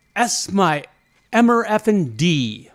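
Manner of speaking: booming, very slow, drawn-out top-of-lungs shout. Retelling a twitching stranger's words on a morning walk: imitating a man shouting. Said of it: "at the top of his voice".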